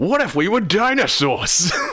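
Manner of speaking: put-on Brooklyn accent. Talking about the movie's intro, imitate its narrator with Dan Castellaneta's Brooklyn accent. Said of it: "Putting on that fantastic Brooklyn accent".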